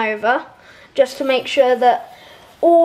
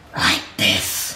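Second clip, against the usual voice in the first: whispered, hushed, breathy, soft evil menace; 5 dB quieter than usual. Showing how a character sounds once it turns evil, evil Flowey voice. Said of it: "How do you do evil?".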